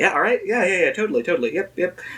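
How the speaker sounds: breezy, offhand, business-casual tone. Retelling the joke that made them laugh, quoting Jay: business casual.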